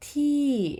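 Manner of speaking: rise-fall tone on ti, climbing high then dropping. Demonstrating the falling tone in a tone lesson: rising then falling tone on ti. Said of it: "observăm aici tonul căzător... pornim de jos, atingem un ton înalt și apoi coborâm".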